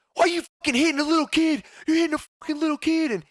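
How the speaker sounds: mock very high, tearful yelling. Retelling a fight, voicing someone yelling at his father, imitating a teary yell. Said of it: "Ethan's like teary eyed and yelling at him".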